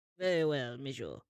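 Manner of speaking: put-on French accent, restaurant waiter style. Acting out an imagined scene, playing the waiter answering the guests, in a french waiter accent. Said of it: "And the French waiter".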